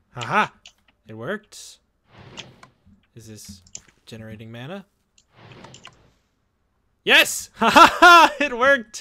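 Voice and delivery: very loud, swooping amazement with high surprised laughter. Checking that a magic setup worked in a game, sounding surprised. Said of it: "You sound surprised".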